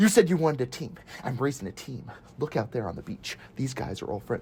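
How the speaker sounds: breathy, half-whispered movie-star voice, breathed out. Acting out a movie scene in a self-described not very good Tom Cruise impression. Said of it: "that's my best Tom Cruise impression".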